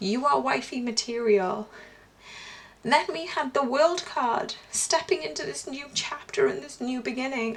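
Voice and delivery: overcome with feeling. Reading tarot cards for the heart space, getting emotional. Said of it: "I don't know why I'm getting so emotional".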